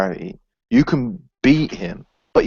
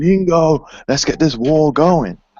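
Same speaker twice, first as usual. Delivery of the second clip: mock angry outburst, higher and louder; 6 semitones higher, 4 dB louder than usual. Retelling a character who suddenly freaks out: imitating freaking out angrily. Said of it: "he freaks out".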